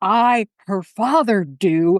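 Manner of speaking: play-acted, stately, grand proclaiming tone, big voice. Retelling what the bride's father said walking her down the aisle: booming voice. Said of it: "in this booming voice says".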